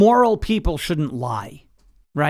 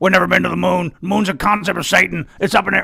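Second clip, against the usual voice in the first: put-on Texan accent, ranting delivery; 2 semitones higher, 3 dB louder than usual. Trying out an impression on a listener and asking if it sounds good, Alex Jones impression. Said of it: "I'm doing Alex Jones again".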